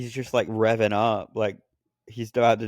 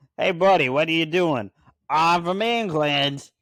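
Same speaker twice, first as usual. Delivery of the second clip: put-on New York accent, pitched higher; 7 semitones higher, 4 dB louder than usual. Playing a british man who talks in a new york accent. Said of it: "as I talk in the like a New York accent".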